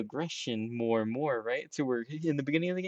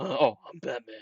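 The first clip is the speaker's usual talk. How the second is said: mocking send-up of a superhero voice. Mocking how a game character talks: Batman voice. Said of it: "Who has that, like".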